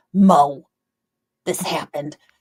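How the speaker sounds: low, dropped, deep mom voice. Quoting a mom as heard in one's head, Linda voice. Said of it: "my mom always sounds like Linda in my head".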